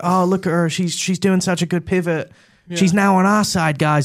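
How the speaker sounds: clumsy put-on American accent. Mocking how American liberal circles talk about a politician: terrible American accent. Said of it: "That was a terrible accent".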